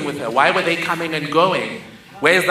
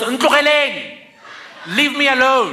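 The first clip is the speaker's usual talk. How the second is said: raised, pitched-up yell, acted out; 8 semitones higher than usual. Retelling the mother at the open window: imitating someone yelling. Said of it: "and yells".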